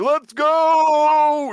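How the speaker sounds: very high, loud, stretched-out carnival barker call. Describing a streamer who hyped the whole time, the speaker does a carnival barker impression. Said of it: "this guy was like a carnival barker".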